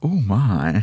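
leering, knowing, lusty exclamation with suggestive relish. Imitating George Takei's catchphrase after a friend's reaction: George Takei "oh my" impression. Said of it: "George Takei thing".

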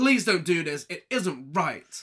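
seething, indignant, fuming and furious delivery. Retelling a film scene where a character objects: imitating someone fuming. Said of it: "She's fuming".

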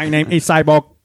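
mechanical, robotic moon-man accent. Showing the others the voice they talk in, moon robot accent. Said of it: "I talk in a moon / robot accent".

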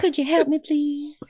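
high, lifted Southern belle accent. Playing a damsel in distress at the mechanic shop, doing a Blanche impression. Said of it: "I go Blanche at the mechanic shop".

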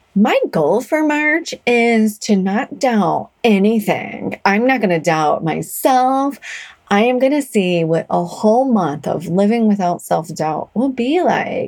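teasing, acted mock parody voice. Quoting own earlier goal, then admitting failure: mock voice for own past words. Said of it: "I do that voice".

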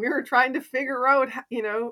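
high, loud, delighted gushing. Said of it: "And they said".

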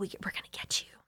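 soft, whispered, menacing villain voice.

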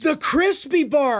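high, mild, shout-like yell. One speaker repeats the lunch spot's name back to the other, shouting. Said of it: "Why are you shouting?".

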